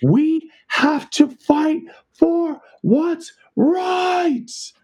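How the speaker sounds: put-on very high, full-lunged, drawn-out scream. Retelling a protester's outburst at a protest: imitating a scream at top of lungs. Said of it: "screams at the top of his lungs".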